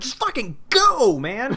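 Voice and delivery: stretched-out, high-pitched yell. Retelling a panic attack while shopping: retelling own yelling. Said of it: "I was yelling at her and saying".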